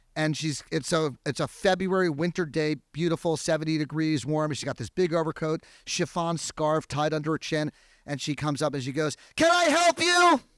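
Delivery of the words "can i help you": very high, loud, top-of-the-lungs shout. Retelling how a little old lady came out of her house: imitating someone shouting. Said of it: "At the top of her lungs".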